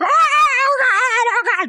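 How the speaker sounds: mock very slow, stretched-out, high panicked screaming. Retelling being stuck in a loud bell tower: imitating own screaming. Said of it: "And I started screaming".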